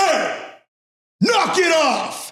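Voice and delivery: play-acted very high, very drawn-out, slow shout. Retelling yelling at his team during a match: imitating himself yelling. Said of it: "Yelled at my team".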